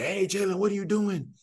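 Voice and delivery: mock sports-coach yelling, high. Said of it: "lot of yelling".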